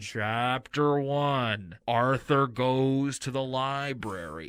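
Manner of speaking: muffled spooky narrator voice through cupped hand. Describing a show's spooky narrator, doing it muffled through a cupped hand. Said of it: "the same way that I do my Bane voice".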